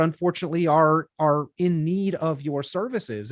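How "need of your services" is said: ordinary talk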